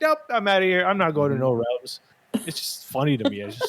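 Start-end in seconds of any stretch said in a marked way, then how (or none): 0.0-2.0 higher-pitched, grumpy, fed-up, annoyed tone. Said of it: "And he's like".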